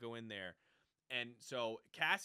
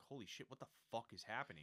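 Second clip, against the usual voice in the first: put-on terrified man's voice, quieter; 7 dB quieter than usual. Retelling a story, the speaker acts out a man seeing enforcer droids: imitating a terrified man. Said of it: "he looks terrified".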